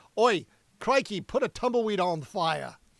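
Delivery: bad, badly faked put-on Australian accent. Guessing at a band's name, joking in a terrible australian accent. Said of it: "That was a terrible accent".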